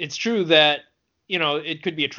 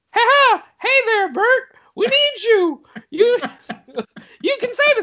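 put-on cartoon mouse voice, much higher, slower; 6 dB louder than usual. Imagining Mickey Mouse standing at your front door and talking to you, in a Mickey Mouse voice. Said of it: "he was like".

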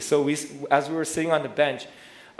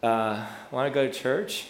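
mock very discouraged, hopeless, slow delivery. Retelling a past moment of feeling sad, acting out discouraged past self. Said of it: "in a very discouraged voice".

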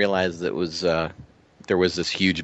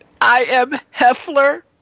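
badly done comic voice, shrill, high and booming; 8 dB louder than usual. Introducing tonight's interview guest, the host does a bad Bobcat Goldthwait impression. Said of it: "that's the worst Bobcat impression".

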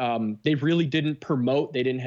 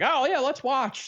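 very high, clumsy, bad put-on voice; 13 semitones higher than usual. Parent retelling the son's reply, terrible impression of son. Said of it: "it's a terrible impression of your son".

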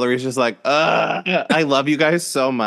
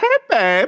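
put-on affectionate, friendly, fond voice, pitched up; 10 semitones higher than usual. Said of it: "And just like, that".

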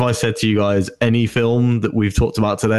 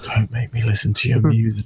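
put-on weary voice. Retelling a movie line by Martin Freeman: imitating weary Martin Freeman. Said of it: "takes this extremely weary look away from Claw and just goes".

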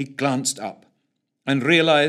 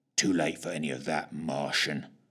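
rumbling growl, very low; 9 semitones lower, 8 dB quieter than usual. Fitch, fumbling with a rifle, answers the pleading Martian, growling. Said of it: "growled Fitch".

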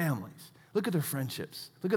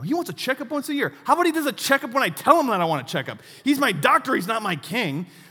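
put-on high, loud, childish tantrum-like ranting. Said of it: "throwing this little childish tantrum".

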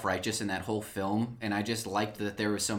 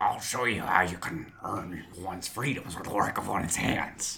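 reserved, refined delivery. Performing a line when put on the spot: reserved, refined Kuiil voice. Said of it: "he's much more reserved and refined".

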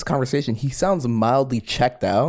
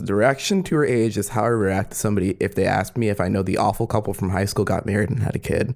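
ordinary talk, nothing marked

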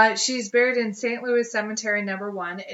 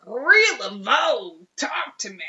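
clueless, dorky out-of-towner tourist voice; 3 semitones higher than usual. Imitating a dork from Ohio calling out to Marie Laveau. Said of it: "dick dork from Ohio who's like".

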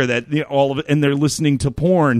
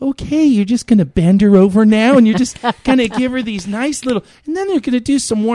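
put-on creepy, pervy, pitched-up children's television host voice; 9 semitones higher, 3 dB louder than usual. Retelling the voiceover from a library prank video: creepy Mister Rogers voice. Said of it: "creepy Mister Rogers voice that I have".

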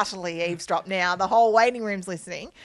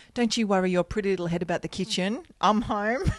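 mock condescending, patronizing tone. Acting out how an offer to help could come off: imitating a condescending husband. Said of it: "could come off like".

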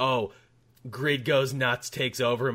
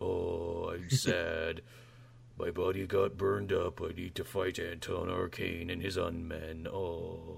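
low, slow, creaky, rough, drawn-out voice; 5 semitones lower, 8 dB quieter than usual. Joking about a show narrated by its hero: Swamp Thing voice like Eeyore. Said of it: "Kinda like Eeyore".

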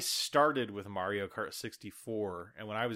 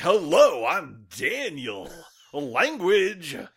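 put-on earnest superhero voice, higher and louder; 8 semitones higher, 12 dB louder than usual. Imitating the other speaker's intro greeting: Captain America voice. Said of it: "you really came into that like Captain America".

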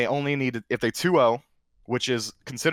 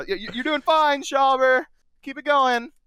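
mock cheering, high, encouraging yell; 4 dB louder than usual. Retelling what he yelled back from the crowd at a game: retelling a yell. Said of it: "I'm gonna yell something back".

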